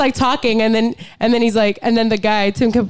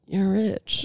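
mock sad defeated tone, much quieter; 2 semitones lower, 9 dB quieter than usual. Retelling a film scene where a defeated man walks in, imitating a sad remark. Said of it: "He just so sadly goes".

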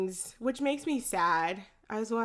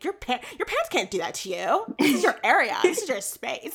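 put-on, over-the-top Valley boy voice; 4 semitones higher, 6 dB louder than usual. Recalling a favorite Vine, the speaker quotes the guy in a super Valley boy voice. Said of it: "it's like a Super Valley boy voice".

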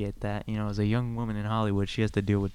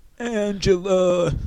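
very high, loud, hollered sitcom-style shout; 10 semitones higher, 7 dB louder than usual. Trying a show line again, calling out as Tony Danza. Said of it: "now I'm doing Tony Danza".

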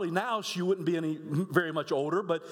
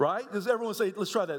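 plain

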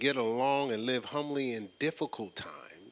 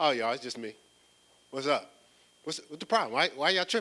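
put-on, easy, offhand, matter-of-fact delivery. Retelling Jesus speaking to the disciples from the water: imitating Jesus matter-of-factly. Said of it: "A matter of factly".

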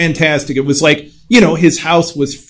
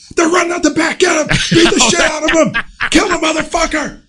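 acted, very high, unhinged, berserk ranting; 13 semitones higher than usual. Retelling a Dragnet raid where the detectives lose their minds: imitating Joe Friday going berserk. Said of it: "everything goes ape shit, where Joe Friday's like".

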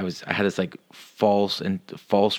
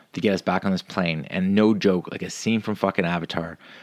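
usual speaking voice

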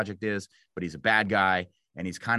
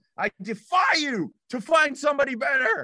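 shrill, triumphant, amped-up shout, pitched way up; 4 dB louder than usual. Speaker recalls jumping in the air after finishing their lines, retelling own yell. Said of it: "and I yelled".

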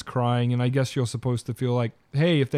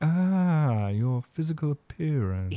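slow, sedate, formal, articulate, polished delivery; 2 semitones higher than usual. Retelling an aide's reply to the mayor: imitating a formal, well-spoken tone. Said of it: "And he's like".

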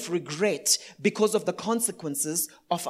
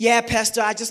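put-on, fake American accent; 4 dB louder than usual. Pastor mimicking people who put on an American accent when calling him Pastor: put-on American accent. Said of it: "they always have to put an American accent".

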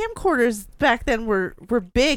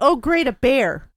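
mock, put-on sarcastic tone. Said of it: "So you're like".

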